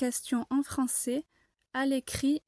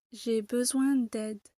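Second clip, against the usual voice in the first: voice drops in pitch at the end on d'aide. Explaining a declarative sentence in a french lesson, falling pitch on d'aide. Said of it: "à la fin de la phrase, la voix descend".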